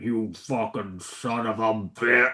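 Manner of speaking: very slow, low growling metal drawl, words dragged. Retelling a movie character's first line: Metalocalypse voice. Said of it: "he talks in permanent Metalocalypse voice".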